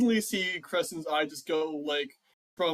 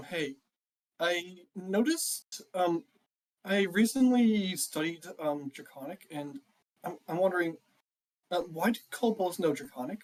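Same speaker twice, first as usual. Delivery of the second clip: whispered, in a put-on character voice. Playing a character who leans over and asks another character quietly: whispering in character. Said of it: "just kinda whispers in her ear".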